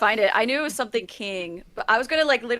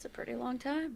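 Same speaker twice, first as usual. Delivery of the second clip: very quiet, hushed mumble under the breath; 14 dB quieter than usual. Answering another character in a role-play, mumbling. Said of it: "I'm gonna mumble this".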